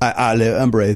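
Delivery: terrible put-on British accent. Speaker imitates Lin-Manuel Miranda's opening line in Mary Poppins Returns: worst British accent. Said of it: "in the worst British accent".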